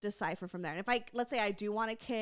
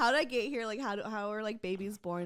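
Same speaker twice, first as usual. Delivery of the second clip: ordinary talk, nothing marked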